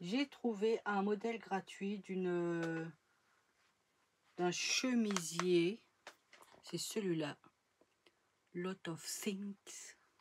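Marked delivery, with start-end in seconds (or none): 8.5-9.9 mock English accent, quieter, slower. Naming the source of a free blouse pattern, in a put-on English accent. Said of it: "Avec mon super accent anglais".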